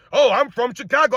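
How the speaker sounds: mocking put-on voice. Mocking a guy who claims he can back both players: mocking imitation of this guy. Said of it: "I can't stand when people say that".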